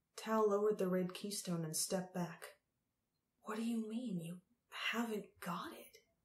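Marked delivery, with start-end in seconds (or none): 3.4-5.9 soft, hushed whisper under the breath. Tal steps back and questions the Empress, whispering. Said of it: "He whispered".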